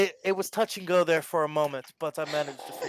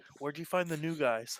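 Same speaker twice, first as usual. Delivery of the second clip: quiet half-whispered tone; 5 dB quieter than usual. Speaking in character as Val to Lyra: half-whispering. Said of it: "Val's gonna whisper to Lyra".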